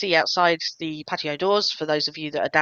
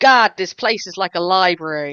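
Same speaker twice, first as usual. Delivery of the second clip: put-on loud, thick American accent laid on; 2 semitones higher, 6 dB louder than usual. Retelling a companion's remark while walking behind her: [name]'s thick American accent. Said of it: "this thick American accent kind of coming out".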